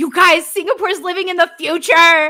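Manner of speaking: mock high, loud, excited scream. Retelling telling everyone about Singapore: imitating own screaming. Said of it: "I've been screaming at them".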